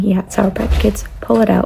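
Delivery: ordinary talk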